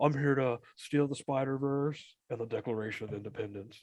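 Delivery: very low movie-star voice. Joking about a movie character, doing a Nicolas Cage impression. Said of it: "That's my Nick Cage impression".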